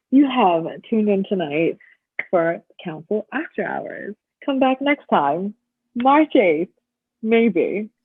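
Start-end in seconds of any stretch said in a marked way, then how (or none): 0.1-6.7 late-night TV infomercial pitchman announcer delivery. Signing off the show council after hours, sounding like an infomercial announcer. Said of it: "You sound like you're trying to do like an infomercial".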